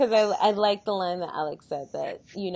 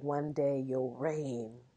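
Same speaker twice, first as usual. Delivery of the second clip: dark, foreboding, ominous prophetic voice; 5 semitones lower, 10 dB quieter than usual. Recapping a scene, quoting a woman's line, retelling an ominous voice. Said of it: "she's like ominous voice".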